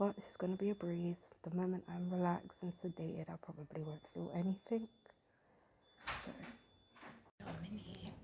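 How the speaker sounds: very quiet talking. Filming alone in a silent hospital before sedation, talking really quietly. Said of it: "I have to talk really quiet".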